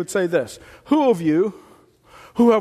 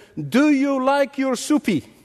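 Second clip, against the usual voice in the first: slow, high, condescending put-on Chinese accent; 5 semitones higher than usual. Retelling what a man said to a chinese friend over a meal, in a mock chinese accent. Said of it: "trying to kind of imitate the accent".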